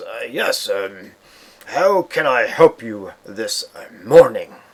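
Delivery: loud, slow, drawn-out orcish voice. Voicing a half-orc servant greeting the players: orcish voice. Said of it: "in his orcish, uh, voice and says".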